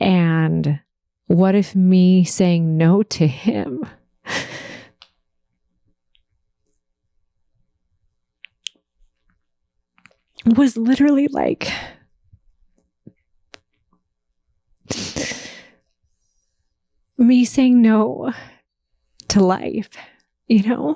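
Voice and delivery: talking while crying, tearful voice. Opening up to the audience, crying. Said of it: "I don't know why I'm crying".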